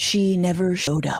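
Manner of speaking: storyteller's documentary-style narrator voiceover delivery. Finishing a story about a woman who promised to show up, narrator voice. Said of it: "Narrator voice".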